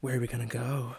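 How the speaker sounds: put-on breathy talking voice. Mocking how Rena delivers a spoken line: imitating Rena's breathy talking voice. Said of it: "breathy talking voice".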